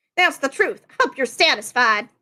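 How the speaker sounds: put-on New York accent. Voice actor delivering a character line, going for a new york accent. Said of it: "I was trying to go for like a New York".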